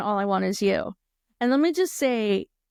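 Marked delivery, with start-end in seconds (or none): none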